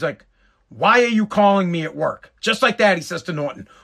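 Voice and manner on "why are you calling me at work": put-on hostile, challenging, confrontational tone. Retelling the father's reply to a phone call at work, imitating a loud aggressive voice. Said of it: "it was like loud and aggressive".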